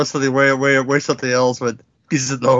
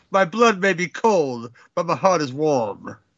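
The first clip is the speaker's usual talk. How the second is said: put-on talking snake voice; 2 semitones higher, 3 dB quieter than usual. Playing out a comic bit with others, be [name] voicing a snake. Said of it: "[name] doing the voice of the snake".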